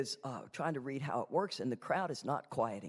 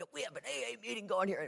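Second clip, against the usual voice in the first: high, hoarse, rough hollering call; 8 semitones higher than usual. Retelling how a friend quieted a noisy room: imitating someone yelling. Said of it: "he yelled".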